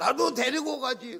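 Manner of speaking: mock very loud, very high sobbing wail. Retelling a widow's words at her husband's funeral: imitating tearful wailing. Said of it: "그러냐고 막 울면서 막 그래".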